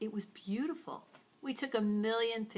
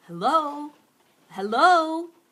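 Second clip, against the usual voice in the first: man's voice calling out loud and high. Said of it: "I heard this man's voice go".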